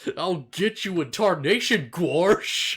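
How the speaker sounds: big, exaggerated cartoon cowboy gunslinger drawl. Showing a version of Goofy they did, in gun-toting Goofy voice. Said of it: "a version of Goofy with, like, guns and a handlebar mustache".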